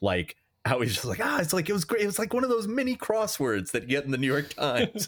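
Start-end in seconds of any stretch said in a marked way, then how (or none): 1.2-5.1 all-excited gushing, pitched way up. Retelling a character's reaction at the ending, imitating excitement. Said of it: "when he's all excited about it".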